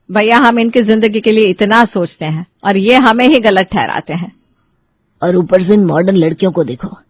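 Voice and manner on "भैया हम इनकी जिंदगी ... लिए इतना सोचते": ordinary delivery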